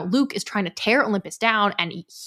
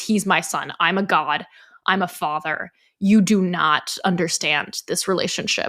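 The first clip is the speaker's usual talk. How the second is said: grave and serious, much lower pitch; 3 semitones lower than usual. Demonstrating the second reading of the line in a Meisner exercise, much more serious. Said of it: "much more serious".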